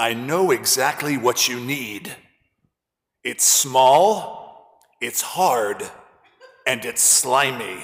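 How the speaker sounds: unusually deep, slow, unhurried voice. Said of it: "she had an unusually deep voice".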